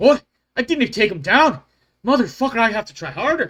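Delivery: very loud, high, badly done Scottish accent. Voicing a character surprised his foe still stands: attempted Scottish accent. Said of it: "that was not even close to a Scottish accent".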